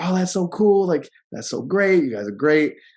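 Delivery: put-on, high, swooping gushing with excitement. Retelling a story, the speaker imitates a woman at a counter asking about a husband, imitating someone getting excited. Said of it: "she's getting excited".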